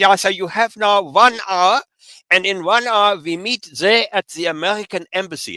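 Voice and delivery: put-on thick German accent, very high-pitched. Telling a travel story, quoting a guy addressing the bus group in a heavy german accent. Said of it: "this guy says in his very German accent".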